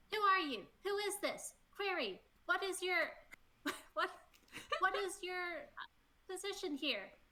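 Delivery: very high, squeaky tiny creature voice. Voicing a tiny creature questioning someone up close: tiny creature voice. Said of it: "tiny creature up in your face going".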